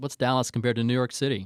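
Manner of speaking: ordinary talk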